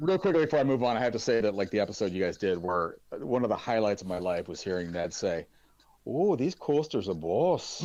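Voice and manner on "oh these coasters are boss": put-on slow, high-pitched Saint Helens accent. Recalling a favourite line from an episode: Saint Helens accent imitating Ned. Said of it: "that's my best Saint Helens accent".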